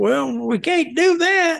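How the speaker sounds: very high-pitched Southern drawl. Retelling a call from the company's legal counsel: imitating lawyer's Southern accent. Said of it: "he had a Southern accent".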